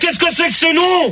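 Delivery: high, furious ranting shout.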